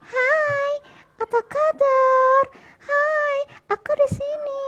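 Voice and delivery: squeaky falsetto, very high and very slow. Showing the voice ventriloquists avoid, in a high falsetto voice. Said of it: "rubah suaranya dengan falset seperti".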